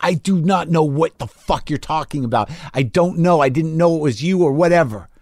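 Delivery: mock screaming, acted scream. Young comic retelling a confrontation with a man who accused him, retelling a scream. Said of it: "And I'm screaming".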